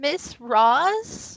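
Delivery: small, trembling, echoey voice with a drawn-out word. Narrating to the group, voice a hidden figure calling from the corner: tiny quavering voice. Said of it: "you hear a tiny, echoey voice say uh, a quavering".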